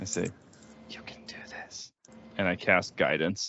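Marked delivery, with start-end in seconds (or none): 0.9-1.9 close, breathy, hushed whisper, very quiet. A player's character touches another character's shoulder before casting a spell, whispering. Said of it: "and I just whisper to him".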